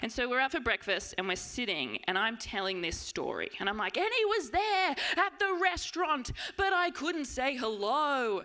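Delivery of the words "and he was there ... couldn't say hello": mock very high, loud, drawn-out full-on yell. Retelling a story told at breakfast with friends: imitating own yelling. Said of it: "yelling it".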